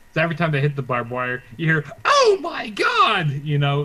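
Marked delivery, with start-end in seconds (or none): 2.1-3.3 high, slow, loud, drawn-out yell like a shocked announcer. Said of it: "you hear Joey Styles yelling".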